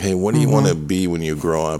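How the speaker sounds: ordinary talk, nothing marked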